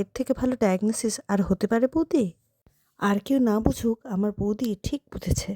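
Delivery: ordinary delivery, nothing marked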